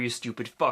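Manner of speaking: plain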